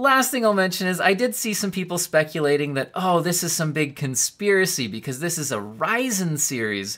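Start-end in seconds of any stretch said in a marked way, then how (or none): none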